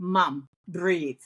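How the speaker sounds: ordinary talk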